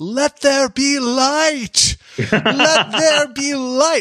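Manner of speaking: very slow, very high, top-of-lungs bellow. Acting out standing in the house during a blackout: mock bellowing at the top of lungs. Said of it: "just bellow at the top of my lungs".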